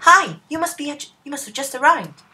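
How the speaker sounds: put-on voice for a female character. Doing a voice for a newly arrived woman: put-on character voice. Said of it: "I think I'm gonna do a voice for her".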